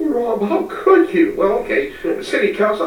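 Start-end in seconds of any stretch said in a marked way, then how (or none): 0.0-1.3 voice fading out while speaking. Imagining speaking to City Council in the words of Laura Petrie, her fading voice. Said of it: "with that kind of fading voice".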